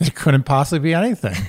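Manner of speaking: dry, sarcastic, mock-doubtful tone. Answering a warning that something is coming: sarcastic tone. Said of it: "you're being sarcastic".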